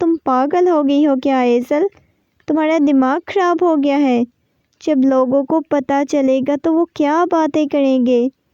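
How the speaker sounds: ordinary delivery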